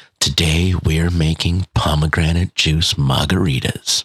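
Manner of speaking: relaxing ASMR voice. Speaker demonstrating ASMR on a podcast, in a relaxing ASMR voice. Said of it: "that relaxing kind of".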